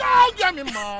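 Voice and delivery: mock angry, high, loud, slow, threatening tone.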